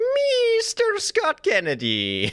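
very high, swooping creepy villain voice. Asked on the show for an impression of Salazar from Resident Evil 4: Salazar impression. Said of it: "Can you do an impression of Salazar from Resident Evil 4".

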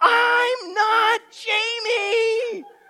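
very high, shrill yell at the top of the lungs. Retelling sitting on a hillside in tears: imitating yelling at the top of lungs. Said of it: "I just yell at the top of my lungs".

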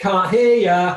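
gleeful, high, very loud playful shout. A parent retelling their youngest son refusing to get out of the bath: imitating a child's playful shout. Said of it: "he just shouts".

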